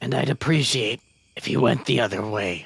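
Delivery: speaking very low, very deep voice. Game master voices a unicorn addressing the adventurers, very deep unicorn voice. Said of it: "A very deep voice for a unicorn".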